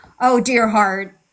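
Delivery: sarcastic, patronizing teacher tone. Showing how a teacher might talk down to a student: sarcastic teacher voice. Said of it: "like a teacher might say sarcastically".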